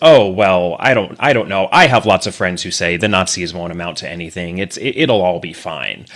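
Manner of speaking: normal talking voice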